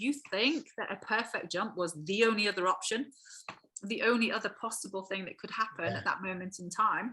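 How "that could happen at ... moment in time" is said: ordinary talk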